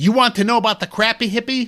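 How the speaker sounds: high, acted-out shout through a microphone. Retelling climbing up and shouting to a crowd: retelling a shout into a microphone. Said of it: "I shouted into the microphone".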